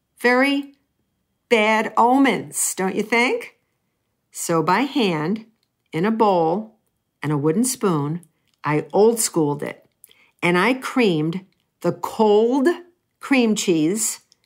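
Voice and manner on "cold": stress on the word 'cold'. Telling how they made a cheesecake by hand, stress on 'cold'. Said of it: "notice the emphasis on the word cold".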